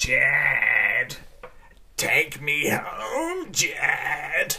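odd, very slow put-on creature voice, one word stretched. Posing a question about a Pokemon that speaks this way: voice of a talking Pokemon. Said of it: "it spoke like this".

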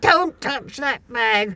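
imitated, commanding shout. Retelling shouting at a man about to take their bag, retelling a commanding shout. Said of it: "I shouted, ... In a very commanding voice".

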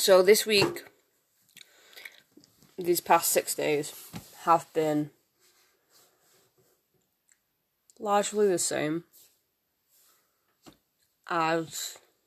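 speaking with chewing gum in the mouth. Recording a weekly update while putting away laundry, talking with chewing gum. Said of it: "I've got chewing gum in my mouth".

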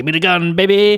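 bad put-on man's voice, high and loud. Retelling a scene where the shot man walks up to her: terrible impression of the man. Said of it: "that's my terrible impression".

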